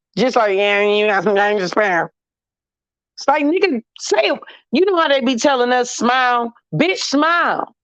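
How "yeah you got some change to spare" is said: put-on, flat, bored tone with zero enthusiasm. Imitating someone asking for spare change: imitating an unenthusiastic beggar. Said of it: "begging with no enthusiasm too".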